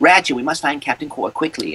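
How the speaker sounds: small, little robot voice. Describing the little robot played in the game: Clank robot voice. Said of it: "it's that robot voice I'm using".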